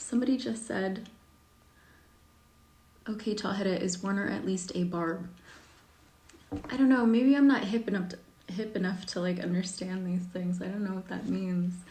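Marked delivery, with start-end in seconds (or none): none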